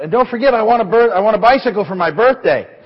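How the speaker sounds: put-on high, loud, abrupt, sudden shout in a boy's voice. Telling a joke about a boy praying at bedtime: imitating a boy shouting. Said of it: "really loud, he shouts out".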